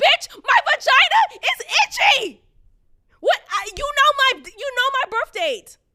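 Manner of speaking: frantic, high, very loud panicked blurt. Retelling what she said to the doctor on the phone: retelling own panicked outburst. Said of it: "I'm panicking, and it's showing in my voice".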